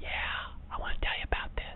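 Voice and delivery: soft, unvoiced, gossipy whisper.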